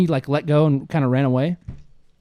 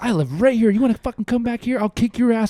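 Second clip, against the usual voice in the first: put-on furious man's voice, high, angry, threatening rant; 7 semitones higher than usual. Retelling dad threatening a driver outside his house: imitating dad going off. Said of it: "He was going off".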